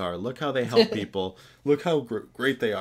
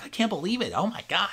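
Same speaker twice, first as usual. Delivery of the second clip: mocking put-on talking dog voice, higher pitch; 10 semitones higher than usual. Mocking how Josh Gad talks as the dog: imitating Josh Gad. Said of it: "he just talks like this".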